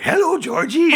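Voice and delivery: very high, loud falsetto, pitch pushed way up. Describing how the character Rhino sometimes sounded: new Pennywise voice. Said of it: "his voice sounded like the new Pennywise".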